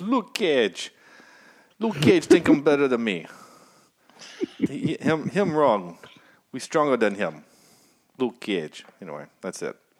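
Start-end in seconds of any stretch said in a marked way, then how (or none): 0.0-8.9 put-on loud Jamaican accent. Quoting the show's Jamaican antagonist as heard: Jamaican accent. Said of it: "the only accent I have is stuck in my head is actually Jamaican".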